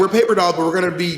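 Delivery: ordinary talk, nothing marked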